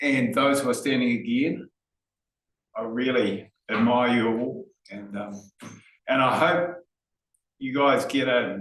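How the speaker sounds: slightly emotional, heartfelt tone. Speaker thanking the team and those standing again; getting a bit emotional. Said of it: "I'm getting a bit emotional now".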